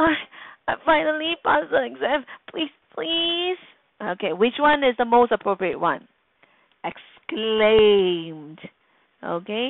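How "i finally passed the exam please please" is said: high, imploring, begging tone. Demonstrating speaking verbs in an English lesson, reading a sentence in a pleading tone. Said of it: "like a pleading tone".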